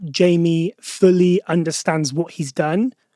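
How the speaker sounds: normal talking voice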